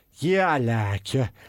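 low, slow, bad put-on Liverpool accent. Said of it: "But okay, for the last time".

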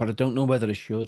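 put-on agitated man voice. Retelling what a sound guy said while driving: imitating an agitated man. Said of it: "he's getting proper agitated".

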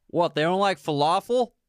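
words pushed around a mouthful. Quoting a movie line for a quiz as the character: imitating a character chewing. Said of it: "so he's chewing something".

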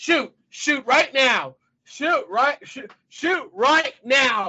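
urgent, repeated, loud, high screaming. Retelling watching a movie at home: reenacting screaming at the tv. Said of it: "I'm screaming at my T V".

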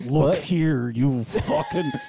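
growled through gritted teeth. Retelling what a sleeping roommate said: imitating speaking through gritted teeth. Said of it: "gritted teeth".

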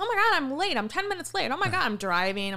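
play-acted, swooping whine. Retelling own past petty complaints about running late: imitating own past complaining. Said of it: "bitching about".

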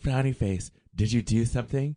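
sexy, seductive voice. Acting out a text exchange with a partner: talking in a sexy way. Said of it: "Why are you talking in a sexy way?".

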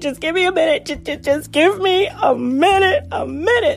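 mock tearful pleading. A mother retells a moment with her daughter; re-enact crying while pleading. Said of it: "And I just bust out crying".

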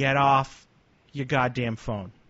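put-on Boston accent, words drawn out, slow. Retell what you say next to someone who did something stupid, in your Boston accent. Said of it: "In your Boston accent".

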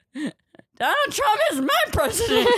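very high, loud, swooping scream-crying sob-wail. Retelling what she told a counter worker while scream crying: retelling own crying. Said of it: "just snot and just scream crying in this line".

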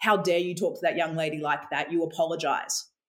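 ordinary talk, nothing marked

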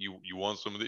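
put-on deep man's voice. Retelling how Richard offered some ham, Richard's deep voice. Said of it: "You know how deep his voice is".

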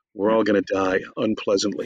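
ordinary talk

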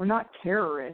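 mock stern, humourless, dead-serious, rude delivery. Retelling a stranger on a bus answering a joke: imitating a very serious reply. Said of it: "really serious and like a total dick".

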